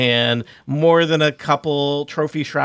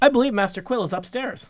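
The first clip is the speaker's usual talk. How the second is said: put-on young servant woman's voice, pitched up; 7 semitones higher, 3 dB quieter than usual. Voicing a young servant woman greeting visitors in the kitchen: young servant woman voice. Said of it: "a young woman, a servant".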